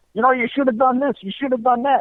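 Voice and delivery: put-on screaming voice. Retelling a father at a racetrack scolding his young son: imitating a father screaming. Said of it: "the father's screaming at the kid".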